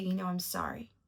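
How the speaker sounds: ordinary talk, nothing marked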